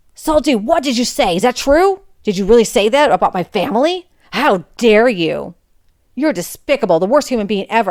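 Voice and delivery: put-on aggressive angry voice. Retelling a classmate who angrily confronts the speaker: retelling an aggressive angry outburst. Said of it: "in an angry walk and very aggressive".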